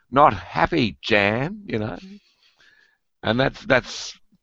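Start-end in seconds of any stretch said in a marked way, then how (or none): 0.1-1.6 high-pitched yell flung out loudly. Recounting a woman yelling after another running through a car park, imitating a woman yelling. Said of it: "this woman yells out".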